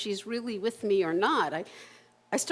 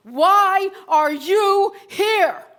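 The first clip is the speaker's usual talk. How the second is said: very loud, very high, booming commanding bark; 9 semitones higher, 10 dB louder than usual. Retelling how a man turned and pointed right at the speaker, imitating a booming commanding man.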